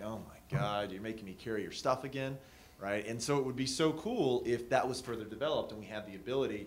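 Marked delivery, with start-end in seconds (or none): none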